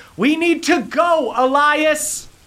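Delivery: very high, drawn-out yelling. Voicing a woman in a remembered quarrel: yelling in an argument. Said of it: "you hear people yelling at each other".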